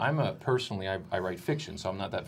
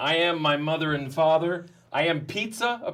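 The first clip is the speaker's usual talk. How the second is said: bold, loud slam-poetry delivery with full swagger; 8 semitones higher, 5 dB louder than usual. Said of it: "big and bravado".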